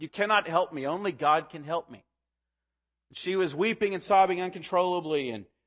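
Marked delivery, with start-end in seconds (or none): 0.0-2.0 put-on Scottish brogue. Speaker retelling a young woman's reply to a man offering help: Scottish brogue. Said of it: "in her Scottish brogue".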